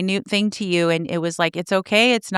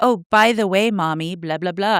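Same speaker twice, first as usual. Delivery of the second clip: acted, flat, matter-of-fact delivery. Retelling how a daughter repeats things: imitating Charlotte, matter-of-fact. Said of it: "she'll say it so matter of fact".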